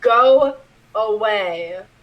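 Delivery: distant, disembodied-sounding voice from across the room. Describing the room with a skeleton as an unseen voice calls out, booming. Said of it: "a voice booms across the room".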